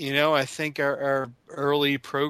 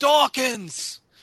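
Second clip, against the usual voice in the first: high, loud mock scream. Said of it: "maybe you start screaming".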